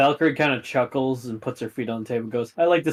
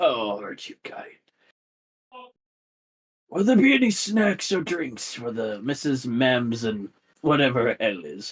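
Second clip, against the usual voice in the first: put-on nice, calm, even, kindly old man voice. Voicing a nice calm old man greeting a visitor: calm old man voice. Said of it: "Nice, calm, old man".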